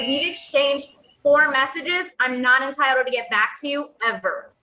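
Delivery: normal talking voice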